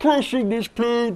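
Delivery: stiff, stuck-sounding puppet-like voice. Describing a movie villain to a listener, doing a Bane impression like a stuck Muppet. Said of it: "you sound like a Muppet that got stuck in a wall".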